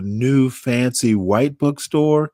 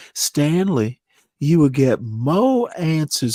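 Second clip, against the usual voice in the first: put-on Southern accent; 2 semitones higher than usual. Retelling what a math teacher said: Southern accent imitating Missus Corrin.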